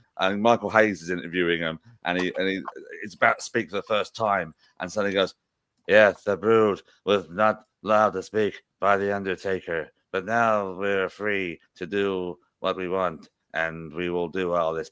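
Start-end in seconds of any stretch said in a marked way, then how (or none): 5.9-14.9 slow, flat, droning monotone. Retelling a first-ever promo interview: imitating Gangrel's monotone.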